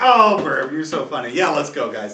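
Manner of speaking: words broken up by laughter throughout. Voicing the priest Eden answering a joke: laughing while speaking. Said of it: "So Eden kinda laughs and goes like".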